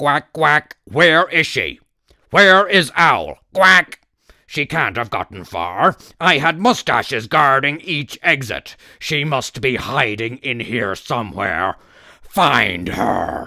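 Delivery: commanding, loud, quacking evil cartoon duck voice. Narrator reads the evil duck ordering a search for the hiding owl, evil duck voice. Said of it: "It is the voice of the evil duck. He seems to be in charge of all the mustaches. / It is the voice of the evil duck. He seems to be in charge of all the mustaches. / He seems to be in charge of all th".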